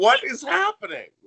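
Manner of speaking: very high, loud, bewildered, baffled tone. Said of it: "she's like".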